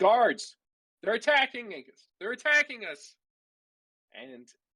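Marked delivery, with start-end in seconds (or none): 0.0-3.2 very high, urgent, alarmed yell. Narrating a fight in a game, the speaker voices a man calling the guards: yelling. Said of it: "He starts yelling".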